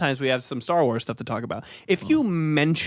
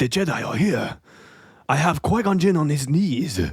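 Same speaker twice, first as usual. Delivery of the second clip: put-on alien accent. In an improvised comedy bit, speaker plays a captor announcing a captured Jedi: Trade Federation accent. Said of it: "Trade Federation accent".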